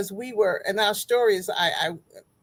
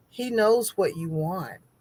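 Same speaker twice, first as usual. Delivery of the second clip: voice lowered for emphasis; 2 semitones lower than usual. Sharing what they are learning, the speaker talks in a lowered voice. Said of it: "I'm lowering my voice".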